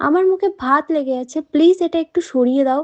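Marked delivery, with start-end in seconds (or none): none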